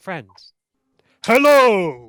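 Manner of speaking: very loud, booming, sing-song, swooping bird creature voice. Voicing a Kenku who drops from the sky and bows: Kenku voice. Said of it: "it is a Kenku".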